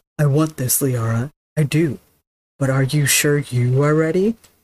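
adorable, cute, put-on bro dude voice. Discussing a game romance, quoting the hero's line in a Bro Shep voice. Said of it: "my adorable interpretation of Bro Shep's voice".

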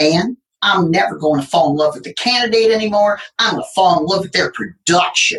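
rough, slight, attempted Southern accent. Quoting a woman she worked with on hiring, imitating a Southern accent. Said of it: "she had this wonderful little Southern accent and I can't mimic it too well".

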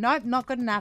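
loud, bossy, demanding, dismissive tone. Retelling rejecting ChatGPT's second try: imitating own bossy tone. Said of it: "real, like, bossy with it".

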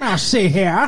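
put-on old-time gangster voice. Doing own "ho ho ho" as a 1940s gangster: Edward G. Robinson gangster voice. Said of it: "like Edward G. Robinson in a, like, nineteen forties gangster".

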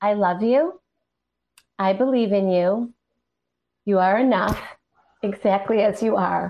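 crying while speaking, voice tearful and breaking. Speaker reading aloud a note kept on their drum, crying while speaking. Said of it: "Look at me. I'm crying".

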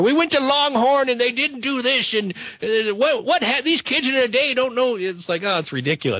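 put-on very high-pitched, cranky, grumpy old man voice. Recalling working in customer service, a speaker does a mock grumpy old guy voice. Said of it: "I just sounded like a grumpy old guy".

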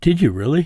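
astonished, impressed disbelief. Reacting to hearing the other speaker read the Constitution: surprised. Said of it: "Don't sound surprised".

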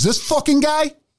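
put-on Italian accent. Retelling a story about a man who confronts someone, speaking as that man to another person. Thick Italian accent. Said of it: "he's got this big, thick Italian accent".

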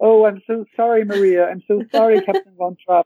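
put-on high, guilt-stricken, remorseful child's voice.

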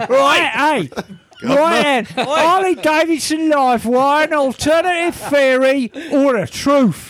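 put-on Cockney accent. Starting to read an email aloud after others ask for an accent: put-on Cockney accent. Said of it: "Cockney accent".

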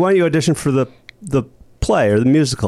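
normal talking voice

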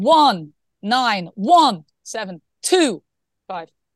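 persuasive, convincing tone. Asked by another speaker to say a number, demonstrating a convincing voice. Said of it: "say 191725 in convincing voice".

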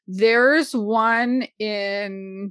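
very slow, stretched and drawn out. Speaker tries to recall a book's name mid-sentence: very slow. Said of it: "I'm saying this very slowly".

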